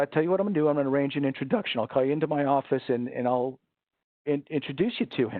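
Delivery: plain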